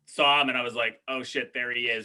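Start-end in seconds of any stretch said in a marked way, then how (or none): none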